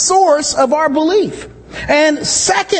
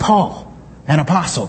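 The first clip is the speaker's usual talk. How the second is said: dramatic, weighty pause after the word paul; 10 semitones lower, 4 dB quieter than usual. Recalling how he first read the letter's opening: dramatic pause after Paul. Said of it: "I kind of read it like that, you know".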